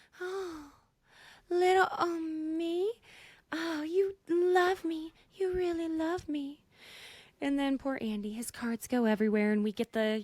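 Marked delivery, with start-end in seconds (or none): 0.2-6.7 put-on delight, much higher, much slower. Acting out Rachel feeling good that men are fighting over her, do a mock-delighted Rachel impression. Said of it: "It made her feel good".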